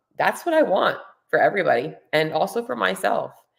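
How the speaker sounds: voice choking up with feeling. Speaker reflecting on their life, choking up, emotional. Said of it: "I'm getting emotional".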